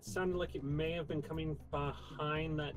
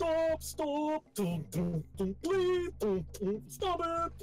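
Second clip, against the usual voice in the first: very high-pitched, drawn-out screaming little dwarf voice; 12 semitones higher, 4 dB louder than usual. Voicing a dwarf attacked by a frying pan: dwarf screaming. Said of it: "a short dwarven fellow screaming at a pan".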